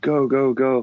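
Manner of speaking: put-on frantic, urgent, high screaming. Recounting staring down a gun, the speaker screams to a buddy; retelling a scream. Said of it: "I'm screaming to my buddy Steve".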